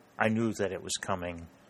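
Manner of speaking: usual speaking voice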